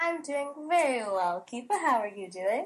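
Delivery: put-on British accent. A co-host answers the host's greeting on the show, put-on british accent. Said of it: "it seems like that British accent".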